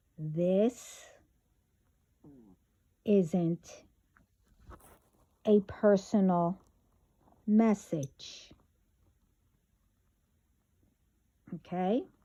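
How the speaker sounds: speaking slowly. Addressing everyone in a morning message, speaking slowly. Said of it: "I want to make sure I will speak slowly".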